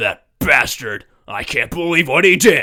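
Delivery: loud, put-on gruff tough-guy voice. Mocking overacted voice performances, doing the gruff guy voice. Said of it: "the gruff guy is always like".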